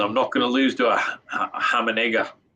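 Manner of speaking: put-on Australian accent. Imagining Jessie talking after winning, the speaker quotes her in an attempted Aussie accent. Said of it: "how is that for an Aussie accent?".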